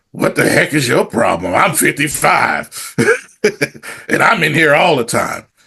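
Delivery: put-on gruff, aged-sounding old voice. Retelling what a guy at the gym said to him, old gruff voice. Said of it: "he says in this old gruff voice".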